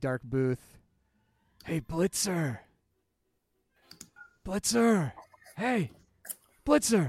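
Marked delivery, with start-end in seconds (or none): 1.6-7.1 pitched-up calling out. Voicing a stranger calling from a dark booth: yelling a name across a bar. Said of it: "you hear someone yell from this".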